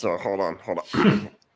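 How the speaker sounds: talking with an air bubble in throat. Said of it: "I'll start talking like this".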